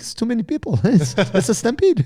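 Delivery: put-on Russian-sounding accent. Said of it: "he sounded Russian".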